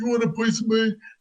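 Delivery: improbable, very high roar in British accent.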